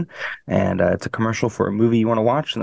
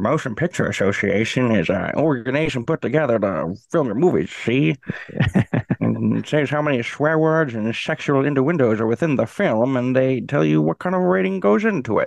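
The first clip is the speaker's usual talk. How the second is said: put-on vintage old-timey 1920s-sounding accent; 2 semitones higher than usual. Explaining something to a listener, in a 1922-style accent. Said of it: "1922 accent fits".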